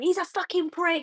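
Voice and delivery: high, full-volume scream at the top of the lungs. Retelling how a topless man being arrested screamed: imitating a man screaming. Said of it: "he was screaming, like, at the top of his lungs".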